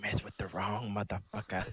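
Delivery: whispering. A player's character whispers to a badly hurt foe, whispering. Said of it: "I'm gonna whisper to him like".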